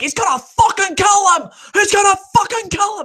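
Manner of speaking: play-acted, very high, yelled ringside wrestling announcer voice. Imagining being a wrestling announcer: imagined wrestling announcer call. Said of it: "Imagine Jerry as a W W E announcer".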